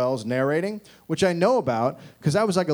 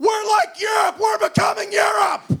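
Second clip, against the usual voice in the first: very high-pitched, shrill shrieking scream; 4 dB louder than usual. Acting out a man who went on TV in January, imitating him screaming. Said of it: "he went on the TV and screamed".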